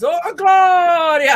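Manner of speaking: high, loud, drawn-out triumphant shout.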